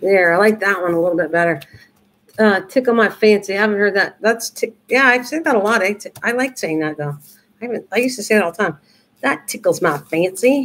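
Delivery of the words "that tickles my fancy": slow, drawn-out Southern accent. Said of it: "gonna start talking Southern there".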